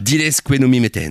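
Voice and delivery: put-on Argentine Spanish accent. Asked by the group to do his best Argentine accent, attempted Argentine Spanish accent. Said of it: "prends ton meilleur accent argentin".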